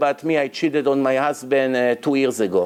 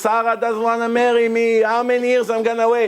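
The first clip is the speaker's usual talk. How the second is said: high, screamed-out, loud delivery; 8 semitones higher than usual. Acting out a worshipper praying aloud in shul: imitating a man screaming a prayer. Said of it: "everyone scream like this".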